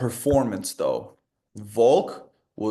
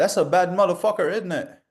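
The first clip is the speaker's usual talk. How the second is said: poor put-on British accent, high-pitched; 9 semitones higher, 3 dB louder than usual. Praising a fighter after a big upset, bad British accent. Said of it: "My British accent sucks".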